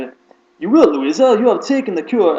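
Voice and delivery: terrible fake British accent. Reading a character's line aloud from the series, terrible british accent. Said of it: "it's a terrible British accent".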